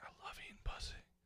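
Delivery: hushed, breathy whisper under the breath. Asking others about choking someone out and whispering to them: slow whisper. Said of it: "slowly whisper, like".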